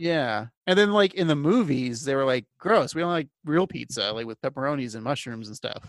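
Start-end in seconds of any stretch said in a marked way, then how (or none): none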